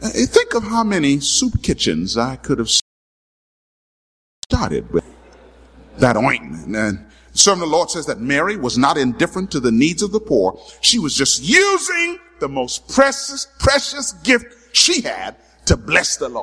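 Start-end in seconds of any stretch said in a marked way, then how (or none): 0.0-6.8 put-on gossiping whisper, lower. Imagining a figure whispering to the other disciples: imitating Judas whispering. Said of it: "I could see him now whispering".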